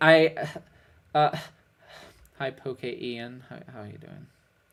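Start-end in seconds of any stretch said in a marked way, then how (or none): 2.4-4.3 very soft, quiet, sad and dejected. Greeting a viewer after losing a game, sounding sad. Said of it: "You sounded so sad".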